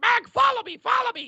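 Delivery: mock screaming, very high and loud. Retelling a teammate calling out during a game: imitating someone screaming. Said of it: "I have Titan screaming at me".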